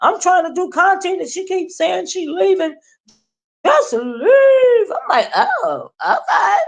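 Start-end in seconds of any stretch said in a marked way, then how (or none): 3.7-4.9 mock hollering, much higher and louder. Retelling how she keeps interrupting while he makes content, retelling someone hollering. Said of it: "Just hollering it".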